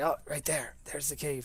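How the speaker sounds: ordinary delivery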